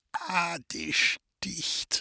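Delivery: quiet, effortful, flat voice. The grandfather answers Mathilde when she asks if it hurts, quiet and effortful. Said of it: "kam es leise und mühevoll aus seinem verzerrten Mund".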